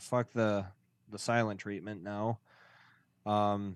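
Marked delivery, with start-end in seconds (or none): none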